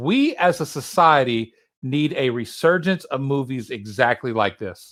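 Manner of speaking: ordinary delivery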